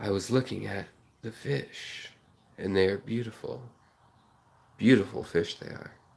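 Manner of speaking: professional public-radio presenter voice. Describing a fish-tank channel host's way of talking, imitating him: NPR voice. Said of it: "that kind of NPR voice where he's like".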